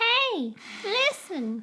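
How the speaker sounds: very high, swooping, sing-song calling out. Signing off after a Zelda joke: Navi voice. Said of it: "I don't do Navi often".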